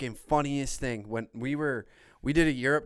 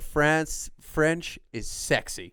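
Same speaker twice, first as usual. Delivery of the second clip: usual speaking voice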